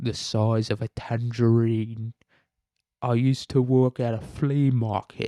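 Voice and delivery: bad, put-on English accent. Joking about a suspect as the Joker: worst Michael Caine impression. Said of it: "a Michael Caine impression".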